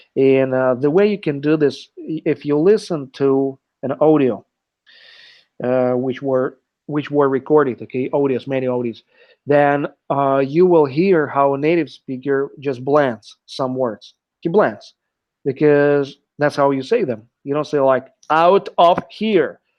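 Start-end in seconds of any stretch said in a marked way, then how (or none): 18.3-19.6 Austrian-accented, slow and loud. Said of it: "it sounds like you're, uh, Schwarzenegger".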